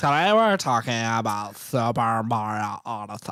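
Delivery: put-on Californian accent. Trying out accents with another person, now a put-on Californian accent. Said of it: "We could do Californians".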